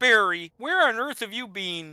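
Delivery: very high, froggy puppet voice. Trying a puppet voice that a co-host says sounds like Kermit: Kermit-like puppet voice. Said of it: "you make it sound like Kermit".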